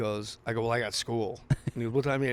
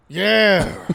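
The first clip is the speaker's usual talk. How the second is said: put-on gruff voice, higher and louder; 9 semitones higher, 14 dB louder than usual. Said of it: "Al Pacino".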